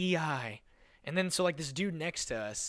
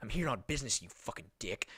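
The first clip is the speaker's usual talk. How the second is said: acted irritated, put-out, bothered and angry tone; 6 semitones lower than usual. Retelling what an annoyed stranger snapped back: imitating someone bothered and angry. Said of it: "all bothered".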